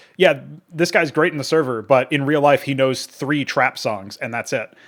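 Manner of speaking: ordinary talk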